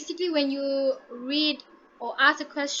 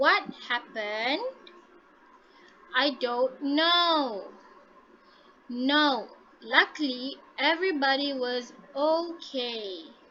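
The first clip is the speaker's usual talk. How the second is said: pitch falls on "happened", "know" and "okay". A teacher demonstrates intonation to a class, with falling intonation. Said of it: "the intonation falls down at the end".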